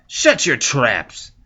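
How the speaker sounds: very loud, high-pitched snarl. A gang leader turns to face his laughing cohorts and snarls. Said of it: "the man snarls".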